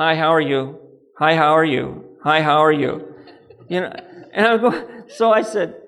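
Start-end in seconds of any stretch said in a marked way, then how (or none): 0.0-3.1 flat, mechanical, robotic voice repeating on a loop. Retelling a checkout greeter at a store, imitating a robotic greeter. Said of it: "a robotic woman standing there going".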